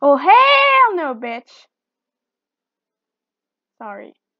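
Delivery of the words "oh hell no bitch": very loud, booming, swooping, drawn-out delivery. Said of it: "the catchphrase for S M G four".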